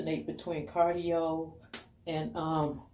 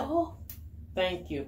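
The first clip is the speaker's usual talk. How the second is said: play-acted, faux-grateful sarcastic tone; 2 semitones higher than usual. Recounting a man handing back the speaker's fallen braid: retelling a sarcastic thank-you. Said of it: "Said it sarcastically".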